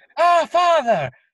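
put-on high-pitched, loud Irish accent. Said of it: "keep doing your Irish accent".

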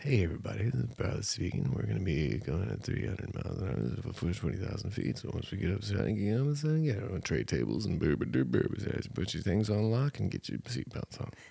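soft, creaky airline pilot announcement voice. Telling about a flight, the speaker does a cabin announcement: airline pilot announcement voice. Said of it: "you sound like a pilot".

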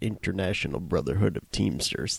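put-on low murmur with a slight Chicago accent. Recalling something watched years ago, the speaker mimics a line: Nicholson impression. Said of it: "you sound a little bit like Chicago Mike there".

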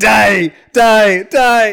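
screaming. Whacking the killer with a board, screaming at him. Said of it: "He's just screaming".

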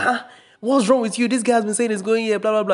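acted very high-pitched scolding shout. Retelling bus passengers yelling at a man: imitating passengers shouting. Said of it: "They were all shouting at him like".

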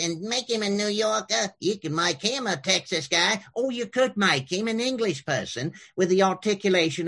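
exaggerated nasal New Yorker character voice. Demonstrating voice options for a character: big nasal character voice. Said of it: "kind of a big nasal character like this".

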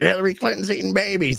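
very high, rough, raspy put-on voice. Mocking a misconception about people like them: Alex Jones impression. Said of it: "my Alex Jones impression".

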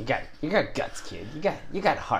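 put-on New York mobster accent. Repeating a line in a 1920s scene, in a New York mobster accent. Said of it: "using like the New York mobster accent".

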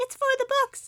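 very high, loud, squealed mock fierce voice.

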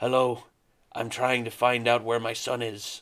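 bad American accent with Irish accent slipping through. Mocking an actor's accent in conversation, speaker quotes him: Liam Neeson's bad American accent. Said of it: "Liam Neeson's American accent is terrible".

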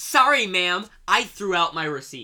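put-on hostile manner, loud and aggressive. Retelling the reply to the store worker: imitating an aggressive reply. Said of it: "you hit her back with it".

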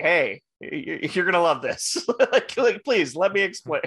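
mock stammering pleading voice. Retelling a movie scene where Howard lands on someone's bike: imitating Howard pleading. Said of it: "he's, like, pleading with them".

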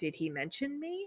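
very quiet, soft, small, high hushed tone. Retelling a scene from a script, quoting a character's question in a softer, smaller tone. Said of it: "in a sort of like a softer, smaller tone".

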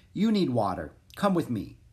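ordinary delivery

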